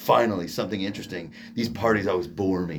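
low, straight-faced, dead-serious delivery.

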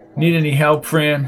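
ordinary delivery, nothing marked

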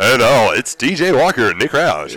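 over-the-top radio announcer voice. Host trying out an extreme radio voice for the show intro, exaggerated radio DJ voice. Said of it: "What if we did the show with a".

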